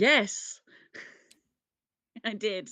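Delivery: very loud, high, eager, enthusiastic voice. Asked in a round of guests whether he had fun, he answers: enthusiastic. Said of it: "I didn't mean to sound so enthusiastic".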